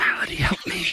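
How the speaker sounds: high-pitched, faint, disembodied-sounding whisper. In a game scene, voicing the whispered voice heard in a player's head. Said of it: "You hear a whispered voice back in your head".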